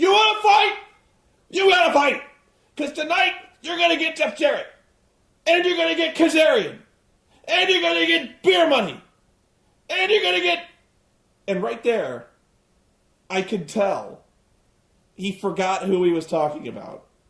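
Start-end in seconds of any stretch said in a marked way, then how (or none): 0.0-10.6 high, excited, screamed wrestling-promo style delivery. Acting out a wrestler screaming off script: Ric Flair impression. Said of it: "he goes".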